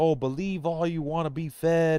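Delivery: lightly played, irate, mildly indignant angry rant. Retelling what angry people say about him: imitating angry people screaming. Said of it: "people that are so angry".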